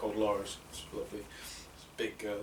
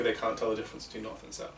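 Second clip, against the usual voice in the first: ordinary delivery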